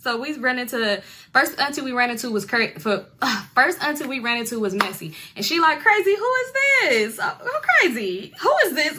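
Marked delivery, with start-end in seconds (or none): 5.8-9.0 very high, over-the-top, swooping put-on giggling speech. Retelling an auntie greeting someone: imitating someone laughing while talking. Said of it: "she like doing the most and like laughing".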